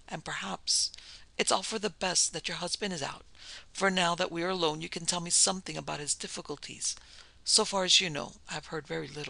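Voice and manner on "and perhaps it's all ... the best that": ordinary delivery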